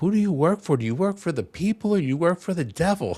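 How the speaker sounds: play-acted, piercing, high-pitched shrill scream. Retelling an activist screaming at lawmakers: imitating Joe screaming. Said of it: "she's just screaming at these lawmakers going".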